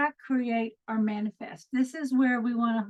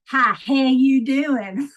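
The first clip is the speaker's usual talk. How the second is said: loud, exaggerated, very slow, drawn-out thick Texas twang; 9 dB louder than usual. Retelling how people mocked the speaker's accent: mock strong Texas accent. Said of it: "they talk real strong like that".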